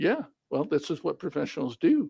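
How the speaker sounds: ordinary talk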